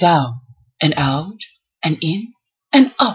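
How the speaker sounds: calm, gentle, slow, soothing voice. Imitating the workout trainer this recovery week: imitating Sean's soothing voice. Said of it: "Sean's voice is very soothing".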